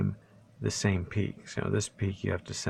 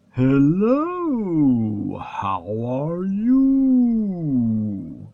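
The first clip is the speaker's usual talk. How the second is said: booming, swooping sing-song, very loud, "you" stretched out; 7 semitones higher, 9 dB louder than usual. In voice mode for a recording demo, George Takei impression. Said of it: "I'm going to do my George Takei hello".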